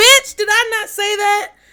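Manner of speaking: very high-pitched, shrill, loud, excited yelling outburst. Getting excited about a reading that came true: yelling. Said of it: "I'm sorry I yelled".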